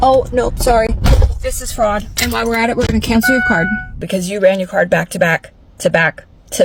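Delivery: normal talking voice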